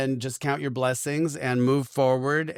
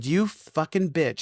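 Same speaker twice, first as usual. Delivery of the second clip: mock-furious outburst, higher; 2 semitones higher than usual. Retelling what they said to a woman offering a cleansing, retelling a furious insult. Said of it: "I was furious".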